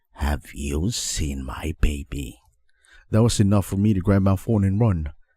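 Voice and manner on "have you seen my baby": soft, quiet, low grumbling in a raspy voice. Reading a scary story, a strange woman asks a question: quiet grumbling raspy voice. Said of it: "in a quiet, grumbling, raspy voice".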